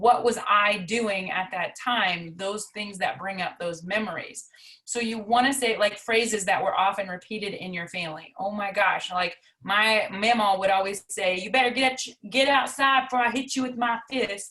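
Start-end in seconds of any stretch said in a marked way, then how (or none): 11.4-14.5 put-on Southern accent, motherly voice. Recalling a phrase mama always repeated, the speaker quotes it: mama's Southern accent. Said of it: "she would always say it in her Southern accent".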